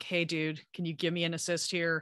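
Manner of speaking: ordinary talk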